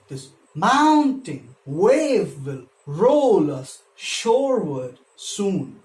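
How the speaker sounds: slow, even iambic scansion, every second syllable stressed.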